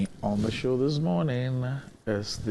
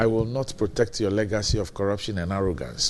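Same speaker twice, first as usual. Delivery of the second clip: ordinary talk, nothing marked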